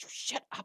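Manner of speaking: soft whisper from somewhere behind. Narrating the scene, a voice whispers from the background at the players, background whisper. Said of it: "You hear a voice whisper from the background".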